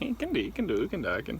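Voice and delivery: sing-song, up-and-down put-on Swiss accent. Showing the accent of the week: swiss accent. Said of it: "We're going for Swiss".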